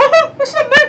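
put-on cartoon mouse voice. Teasing a friend about their voice, the speaker mimics it; Mickey Mouse voice. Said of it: "you're doing your Mickey Mouse impression".

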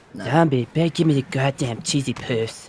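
low, hushed, soft, demanding cartoon brat voice. Chatting with friends and addressing one called Zombie: Cartman voice. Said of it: "my Cartman voice".

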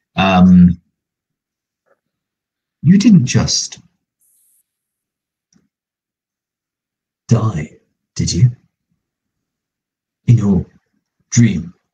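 quiet, hushed, covert stage whisper. Player's character murmurs to a companion, hiding it from the guard, quiet stage whisper. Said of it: "which I'm quietly stage whispering".

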